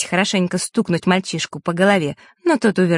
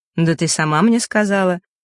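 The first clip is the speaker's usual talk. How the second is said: ordinary delivery, nothing marked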